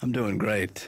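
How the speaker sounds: sounding down and unhappy. [name] answers Paula on the phone, sounding down. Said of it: "You don't sound great".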